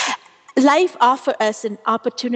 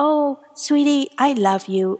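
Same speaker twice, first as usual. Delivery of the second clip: soothing, comforting princess voice, higher; 4 semitones higher than usual. Voicing the comforting inner princess voice: soothing princess voice. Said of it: "your princess voice, absolutely, is like".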